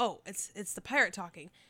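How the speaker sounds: ordinary delivery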